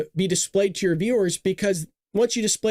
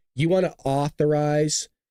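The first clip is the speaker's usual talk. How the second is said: mock-condescending, much lower and slower; 4 semitones lower than usual. Act out how she always questions someone over what they just said, in a mock-condescending tone. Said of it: "that condescending, there's that tone there".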